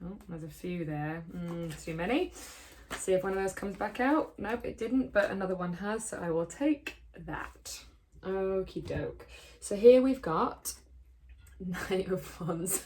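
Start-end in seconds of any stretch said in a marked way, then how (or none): 9.6-12.8 speech broken up by laughter throughout. Drawing a tarot card and naming it: laughing while talking. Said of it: "Sorry, I'm laughing because".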